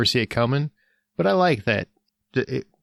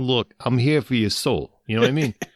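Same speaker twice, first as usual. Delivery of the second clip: straight Jersey accent, tough-guy manner. Picturing how the Grim Reaper would sound: Grim Reaper as a Jersey guy. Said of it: "a guy from Jersey who's just like".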